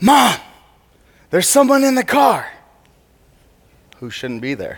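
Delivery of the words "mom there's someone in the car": mock, high-pitched shouted yell. Retelling a sister calling out from the carport: imitating a yell. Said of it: "she yelled".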